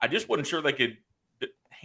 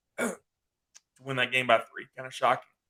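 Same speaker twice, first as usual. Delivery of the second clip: mock choked-up voice, as if about to tear up. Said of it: "Sorry, got a little choked up there".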